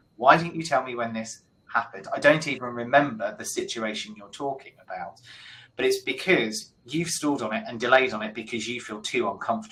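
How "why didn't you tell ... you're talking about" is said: ordinary delivery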